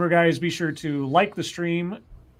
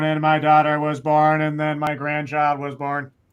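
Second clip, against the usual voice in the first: mock boring, droning monotone; 3 dB louder than usual. Mocking Amy's boring answer about her family, mimicking Amy's flat monotone. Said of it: "in this monotone".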